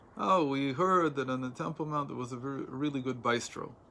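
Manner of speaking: normal talking voice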